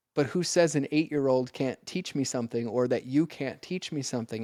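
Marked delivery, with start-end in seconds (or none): none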